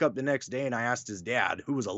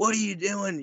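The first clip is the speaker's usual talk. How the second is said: put-on angry scolding old woman voice, pitched up; 8 semitones higher than usual. Speaker retelling grandma's reaction to them bursting into her house, imitating grandma angrily. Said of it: "she's mad".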